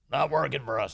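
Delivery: put-on New York politician voice. Quoting a mayor complaining about Biden's policies: Eric Adams voice. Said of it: "In that Eric Adams voice".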